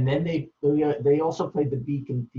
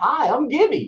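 ridiculous, very high, loud Texas drawl; 12 semitones higher, 6 dB louder than usual. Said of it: "[name] would just say".

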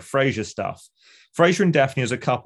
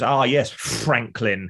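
spitting cartoon-cat impression, slower. Quoting an actor's bit on a sitcom episode, a spitting Sylvester the Cat voice. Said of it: "spits exactly the same as Sylvester the Cat".

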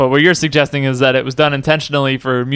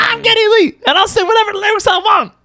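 very high, cartoonish put-on character voice. Impersonating a cartoon character's line, in a South Park character voice. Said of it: "that's my impression of whatever character that was".

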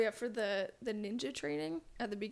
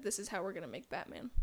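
ordinary delivery

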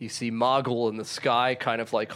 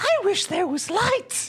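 very high, silly, tiny little voice; 3 dB louder than usual. Voicing a character heard in the dark: silly little voice. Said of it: "you just hear this silly little voice".

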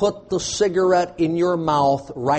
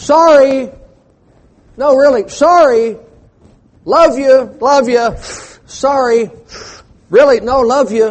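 very loud, high, drawn-out hollering; 8 semitones higher, 9 dB louder than usual. Describing someone who ignores God, then acting out imitating someone yelling sorry. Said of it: "yell out from".

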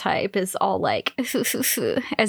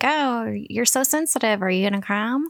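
put-on teasing woman's voice; 3 semitones higher than usual. Recapping a scene for a listener, imitating Misaki's mock-teasing. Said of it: "Misaki's kind of teasing him about".

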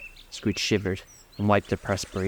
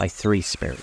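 ordinary delivery

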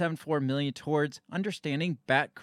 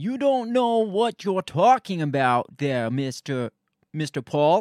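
raised, heated voice; 6 dB louder than usual. Acting out a back-and-forth spat with Mr. Paul as if in A Few Good Men, Fauci impersonation. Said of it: "that's my best Fauci impersonation".

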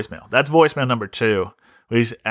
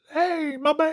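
put-on very high-pitched voice, much slower; 5 dB quieter than usual. Describing how someone's voice sounds on voicemails, imitating a very high voice. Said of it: "very much like this".

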